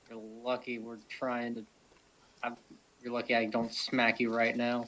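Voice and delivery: low muttered aside under the breath. A player character snapping back at someone, muttering under his breath. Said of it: "mutters under his breath".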